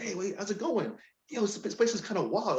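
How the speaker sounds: acted casual joking tone. Retelling a friend chatting up a girl at a bar: imitating a friend smiling and joking. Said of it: "smiling, joking around".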